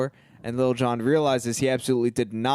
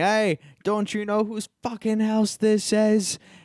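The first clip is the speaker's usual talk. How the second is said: very high-pitched yelling; 10 semitones higher than usual. Retelling a movie scene where a character shouts at the door: imitating someone shouting. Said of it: "he starts shouting".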